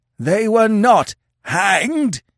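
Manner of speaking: very high, piercing, shrill screech. The old chief takes the floor again before Conan, screeched. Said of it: "he screeched".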